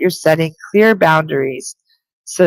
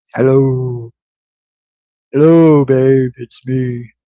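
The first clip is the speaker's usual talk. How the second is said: put-on, extremely deep, very low voice; 5 semitones lower than usual. Relaying to Sarah the words of a person who is present, in an extremely deep voice. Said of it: "is here with an extremely deep voice".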